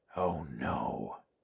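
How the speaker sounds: very soft, very low, hushed half-whisper. Seeing the dragon in the sky, Clarence reacts in a half-whisper. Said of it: "Clarence whispered".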